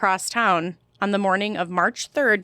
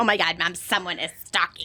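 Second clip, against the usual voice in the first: put-on panicked, freaking-out teenager voice; 2 semitones lower than usual. Imitating a daughter who would flip out over the letter: imitating a panicked teen. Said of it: "She'd be like".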